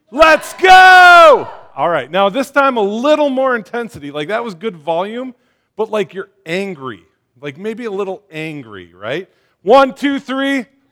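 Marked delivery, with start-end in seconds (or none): 0.2-1.5 very high, loud yell. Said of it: "you gotta yell out".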